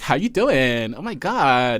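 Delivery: put-on very slow, drawn-out valley girl drawl. Discussing how people sound, the speaker demonstrates a valley girl voice. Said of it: "If you sound like a valley girl".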